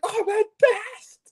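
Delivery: very high, drawn-out stunned squeal. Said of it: "I was like".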